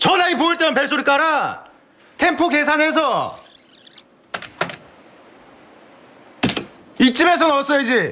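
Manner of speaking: irritated, angry, scolding lecturing tone. Teaching mom the ringtone timing and scolding her mistake, angry while teaching. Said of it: "왜 화를 내?".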